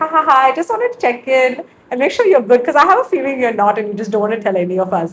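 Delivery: mock talking through laughter. Retelling a friend's phone call checking in: imitating a friend laughing while talking. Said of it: "she's, like, laughing".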